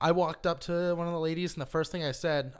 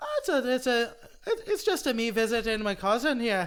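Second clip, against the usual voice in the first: terrible put-on Irish accent, pitched up; 7 semitones higher, 4 dB louder than usual. Retelling pretending to be from ireland while talking to a girl; bad irish accent. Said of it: "That's almost better than your Irish accent".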